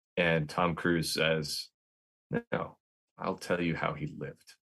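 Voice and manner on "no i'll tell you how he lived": choked-up voice, close to breaking, near tears. Quoting a movie line about a friend who was killed, nearly crying. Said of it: "I almost can't say that without crying".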